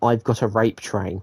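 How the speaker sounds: ordinary talk, nothing marked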